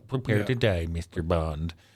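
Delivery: mock slow, droopy cartoon dog voice. Showing how the Hugo Drax bit started: Droopy Dog voice. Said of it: "I just started doing the".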